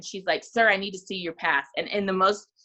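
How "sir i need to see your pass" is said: mock very serious tone. Retelling a security guard asking an actor for his pass: imitating a very serious security lady. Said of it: "very, very serious lady".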